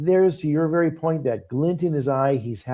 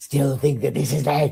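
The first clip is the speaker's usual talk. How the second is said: mock-vicious snarl, words spat out. Describing an actor who turns vicious on a dime: mock-vicious, spitting it out. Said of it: "he almost spits it out".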